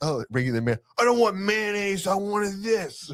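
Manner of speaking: put-on acted, very high, rising, belligerent drunken rant. Acting out a drunk person snapping about mayonnaise: imitating a belligerent drunk. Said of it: "Just get belligerent".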